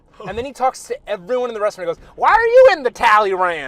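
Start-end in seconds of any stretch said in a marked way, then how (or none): 2.2-3.7 very loud, swooping put-on Southern accent. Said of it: "he's like this Southern kinda guy that talks like this".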